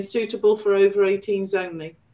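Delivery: normal talking voice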